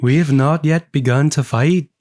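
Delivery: attempted Scottish accent that sounds like Liverpool. Retrying a quoted line after being told the accent is wrong, attempted Scottish accent. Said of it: "This is Liverpool".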